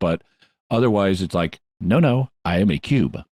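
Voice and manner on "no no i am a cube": slow, filtered, mechanical robotic voice. Imitating how the cube characters talk: imitating robotic cube characters. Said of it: "so they sound kind of robotic".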